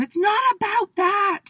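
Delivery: mock very high, slow, drawn-out shriek. Retelling what the speaker eventually said to him, retelling a scream. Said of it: "I screamed at him".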